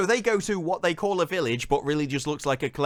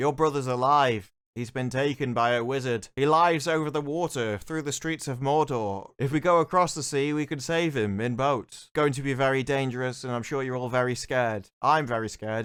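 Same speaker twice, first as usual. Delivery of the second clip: mock, flat, wooden monotone delivery; 2 semitones lower than usual. Mocking an actor who delivers every line the same: mock flat monotone acting. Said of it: "as you can tell by the tone of my voice".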